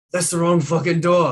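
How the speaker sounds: loud, high, annoyed snapping voice.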